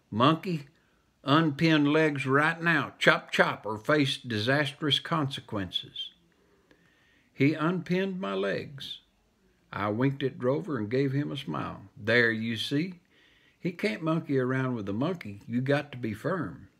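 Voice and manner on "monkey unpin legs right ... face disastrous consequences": ordinary delivery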